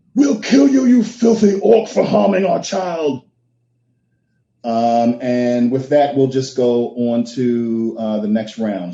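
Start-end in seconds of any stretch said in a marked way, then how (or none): 0.2-3.3 very high, enraged, furious yell. Voicing a human who threatens an orc over their child: yelling in character. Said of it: "he yells at you".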